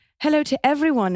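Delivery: posh received pronunciation. Reading a listener question aloud: RP British accent. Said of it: "I'll read you the next question in a".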